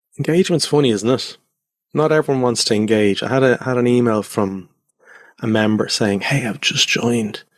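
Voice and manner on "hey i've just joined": breath-only, hushed half-whisper. Speaker reads out a new member's email, half-whispering. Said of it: "The reason why I'm whispering here".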